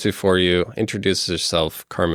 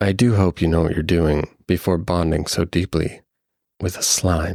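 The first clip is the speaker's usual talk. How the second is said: deeper, low feminine voice. Narrator voicing an unseen speaker addressing the listener, in a deeper feminine voice. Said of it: "a deeper feminine voice that says".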